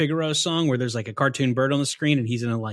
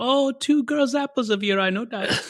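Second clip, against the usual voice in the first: put-on old nanny voice, much higher pitch; 10 semitones higher than usual. Describing a favorite film scene, retelling a quip in the Mrs. Doubtfire voice. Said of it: "doing the Mrs. Doubtfire voice".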